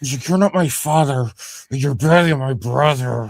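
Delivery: put-on voice talking through teeth. Discussing how Thea talks, imitating Thea talking through her teeth. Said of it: "Thea talks to her teeth a lot".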